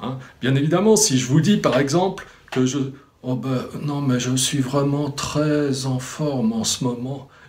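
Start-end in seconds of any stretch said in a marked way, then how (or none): 3.2-7.2 glum, downcast, slow dejected delivery. Showing how tone can contradict the words, slow, dejected tone. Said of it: "qui vous parle comme ça, lentement, l'air dépité".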